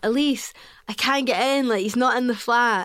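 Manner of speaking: shouted call. Retelling how he shouted to elise from the locked door, imitating someone shouting. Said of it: "he like shouts at her like".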